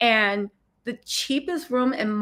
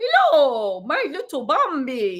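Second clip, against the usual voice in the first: fake Danish accent, sing-song; 4 semitones higher, 4 dB louder than usual. Imagining a danish private driver, the speaker tries a danish accent. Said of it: "Is that a Danish accent?".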